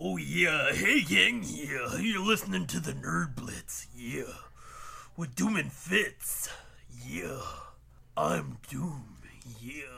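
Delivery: low, rough delivery. Greeting listeners at the start of the show: Macho Man voice. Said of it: "if I talked like this".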